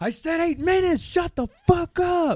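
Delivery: very high-pitched, shrill, furious, angry shout. Retelling what a man yelled at another man waiting for the train, imitating an angry shout. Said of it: "I just heard him go".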